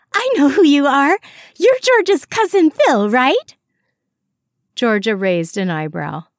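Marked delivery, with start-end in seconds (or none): 0.1-3.5 very high, rapid, bubbling, eager excited gush. Iris greets Phil, the man Georgia brought, excited. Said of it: "Iris hopped up and down excitedly".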